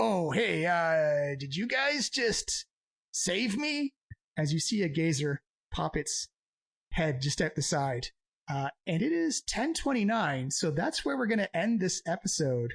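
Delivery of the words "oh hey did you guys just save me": slow, drawn-out, calling-out floating eyeball creature voice. Voicing a gazer peeking around a corner: gazer voice. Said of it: "He's like".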